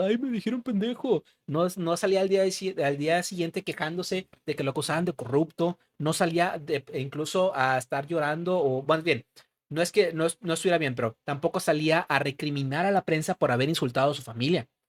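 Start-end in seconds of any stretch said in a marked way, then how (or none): 0.0-1.2 high, whiny mock sobbing voice. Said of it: "no salía al día siguiente llorando, diciendo".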